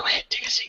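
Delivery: soft, hushed whisper. Speaking in character to Kiki, telling her to sit: whispering. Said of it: "I'm gonna whisper to Kiki".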